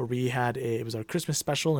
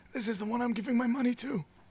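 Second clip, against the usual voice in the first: put-on acted dying old man voice, higher pitch; 10 semitones higher than usual. Acting out an imagined dying rich great uncle who found his heir: playing a dying rich great uncle. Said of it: "and then he's like".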